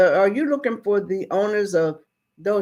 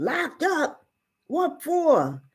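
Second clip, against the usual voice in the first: put-on worried, surprised, concerned tone with raised pitch; 7 semitones higher, 4 dB quieter than usual. Retelling a father's reply to the marshal: imitating a concerned tone. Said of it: "now he's getting all, you know, concerned".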